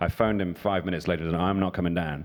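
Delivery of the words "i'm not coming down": ordinary talk, nothing marked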